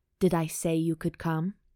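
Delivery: in a dark tone. During sex, he stops the narrator's hand and questions her, darkly. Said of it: "He asks darkly".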